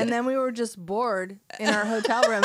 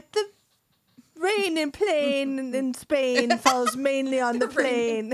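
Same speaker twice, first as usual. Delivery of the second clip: clumsy, dreadful put-on British accent; 3 semitones higher than usual. Friends joking about trying accents, speaker attempts one, dreadful put-on accent. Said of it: "that's absolutely dreadful".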